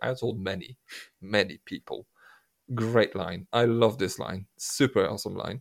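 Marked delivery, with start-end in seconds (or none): 0.0-2.1 soft, flat, completely deadpan. Recounting a favorite film line, speaker quotes the actor: imitating Colin Firth's deadpan. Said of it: "in a deadpan moment goes like".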